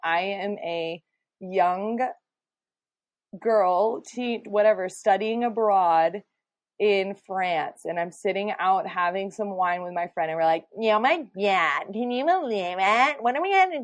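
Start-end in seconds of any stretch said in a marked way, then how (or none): 10.8-13.8 nasal, British-style fake American accent. Picturing herself studying abroad, having wine with a friend, in a nasal american accent. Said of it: "nasally, ... British people do an American accent".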